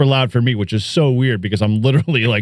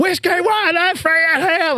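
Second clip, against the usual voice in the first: put-on very high-pitched, shrill yelling. Retelling a radio call to his wife's question, imitating his own shout. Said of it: "What are you yelling at?".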